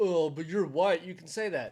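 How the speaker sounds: usual speaking voice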